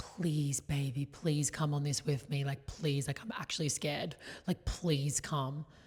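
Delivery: play-acted, earnest, insistent imploring and begging. Retelling her own plea to a partner to join the trip: imitating her own begging. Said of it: "And I'm begging him".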